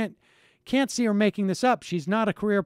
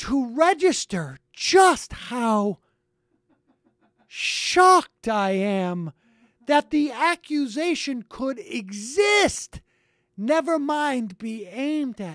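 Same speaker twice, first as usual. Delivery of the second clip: mock slow, breathless, over-enunciated delivery; 4 semitones higher than usual. Mocking a woman's reaction to being accused, in a slow, over-enunciated, breathless way. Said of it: "I'm going to speak in such a slow, over-enunciated, breathless way".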